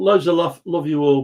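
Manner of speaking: normal talking voice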